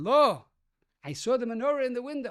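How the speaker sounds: put-on thick German accent throughout. Retelling a woman at the door seeing the menorah: heavy german accent. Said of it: "a woman standing there with a heavy German accent".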